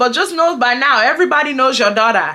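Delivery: ordinary delivery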